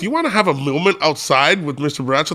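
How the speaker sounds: ordinary delivery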